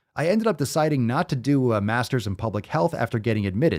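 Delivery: plain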